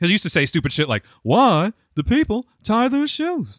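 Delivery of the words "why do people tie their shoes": very high, drawn-out comedian voice, every word stretched. Retelling a comedian's Jerry Seinfeld character: Jerry Seinfeld impression. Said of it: "you're getting better".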